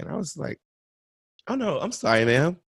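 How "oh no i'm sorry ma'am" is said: courteous, gentle, polite and apologetic. Retelling own refusal of a pushed card: retelling a smiling polite refusal. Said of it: "with a smile on my face".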